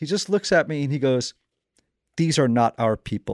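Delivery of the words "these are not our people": mock-deadpan delivery, much lower. Retelling a man's straight-faced remark that made the speaker howl, imitating a deadpan delivery. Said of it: "Just a straight face".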